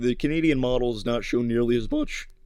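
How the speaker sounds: voice cracking. Speaker comparing weather models, voice cracking. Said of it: "that might be the greatest voice crack of all time".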